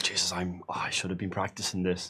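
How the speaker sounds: muttering under breath. Voicing a character who shouted orders and now turns to heal Cordelia: mumbling. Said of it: "And then mumble".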